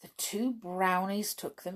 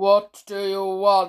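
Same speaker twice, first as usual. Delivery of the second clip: booming, very loud, deep storybook voice; 2 semitones higher, 12 dB louder than usual. Reading a story aloud, the man with the magic cap speaks: loud, deep voice. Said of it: "he said in his loud, deep voice".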